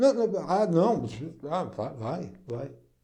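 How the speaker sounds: exaggerated, unsure, hesitant stammer tripping over words. The speaker acts out an unsure seller answering a client's question, stuttering. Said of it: "gaguejando desse jeito".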